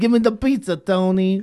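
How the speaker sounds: put-on New York accent. Playing along with a friend's attempt at the accent, New York accent. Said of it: "I was trying to do a New York accent".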